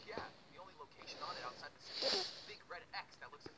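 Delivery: ordinary delivery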